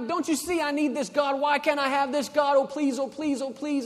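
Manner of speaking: mock tearful, high, pleading beg. Acting out a person begging god in prayer, imitating someone pleading to god. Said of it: "you're crying and you're pleading".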